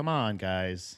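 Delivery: bored, impatient, slow, low whiny drawl.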